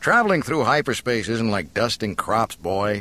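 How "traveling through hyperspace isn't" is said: plain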